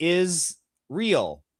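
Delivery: brief pause, then the word "real". Told to pause in the middle of the line: short pause before real. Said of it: "pause in the middle there".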